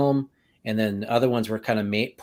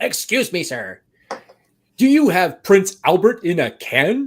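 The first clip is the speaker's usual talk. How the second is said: loud, swooping, drawn-out, stretched clown voice; 8 semitones higher, 8 dB louder than usual. Describing a video scene where a voice is heard: Tim Curry voice. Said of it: "Tim Curry's voice doing the whole".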